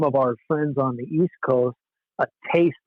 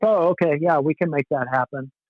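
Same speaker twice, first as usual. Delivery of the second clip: put-on German accent; 2 semitones higher than usual. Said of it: "this German-sounding guy".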